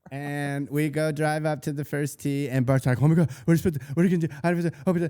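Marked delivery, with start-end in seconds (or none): 3.0-4.7 acted jittery, flustered, high, rushed nervous babble. Retelling driving up to the first tee, imitating nervous Bart. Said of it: "he's so nervous".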